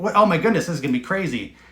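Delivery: normal talking voice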